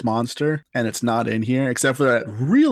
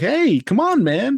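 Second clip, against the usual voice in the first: mock chipper cheerful tone, higher pitch; 11 semitones higher than usual. Retelling an audiobook reader's line for a character: imitating a chipper, cheery voice. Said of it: "he just sounds, like, chipper and cheery".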